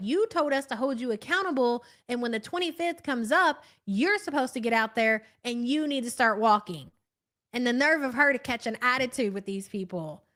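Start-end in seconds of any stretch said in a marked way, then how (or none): none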